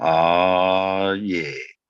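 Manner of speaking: put-on radio announcer voice, drawn-out "oh". Greeting viewers at the start of a stream: put-on radio voice. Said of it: "It's my radio voice".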